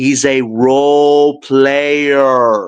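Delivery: very slow, low, deliberate word-by-word emphasis. Grading a player for the audience, making his point said very slowly. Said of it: "I'm going to say this very slowly".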